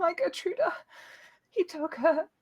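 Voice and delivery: very high-pitched sobbing cry. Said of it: "she again sobs".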